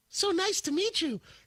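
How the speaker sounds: very high, squeaky little anime schoolgirl voice. Retelling how a man acted on meeting someone, in a twelve-year-old anime girl voice. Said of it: "he was twelve-year-old girl Japanese anime".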